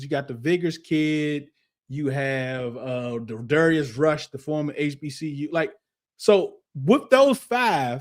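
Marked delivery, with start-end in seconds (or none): none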